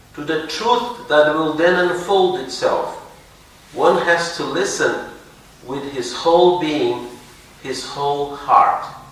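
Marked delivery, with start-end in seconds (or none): none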